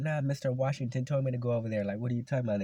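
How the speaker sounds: loud yelling back in protest. Retelling a shouted reply to the P E teacher: retelling own yelling. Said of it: "I started yelling back".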